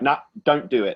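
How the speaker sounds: usual speaking voice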